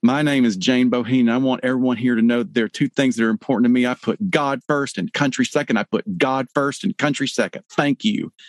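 mock fierce, earnest, intense and angry delivery. Retelling a contestant's introduction on stage: imitating an intense angry speech. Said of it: "she has this really intense, angry look on her face".

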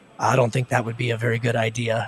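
low, grumbled mutter under the breath. Retelling a fellow resident's reaction to the plan: imitating someone muttering under his breath. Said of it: "just kind of muttering under his breath".

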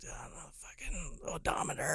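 very soft, quiet muttering under the breath.

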